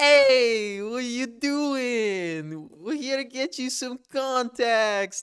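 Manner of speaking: put-on heavy Brooklyn accent, laid on thick, "doing" drawn out. Quoting a guy at a place the speaker has visited, thick brooklyn accent. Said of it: "he has the thick accent".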